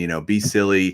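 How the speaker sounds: ordinary talk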